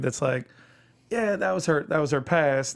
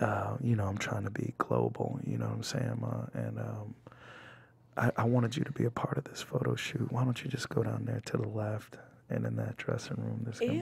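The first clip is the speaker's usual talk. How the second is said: deep, gravelly, creaking voice; 5 semitones lower, 10 dB quieter than usual. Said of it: "Stevie voice".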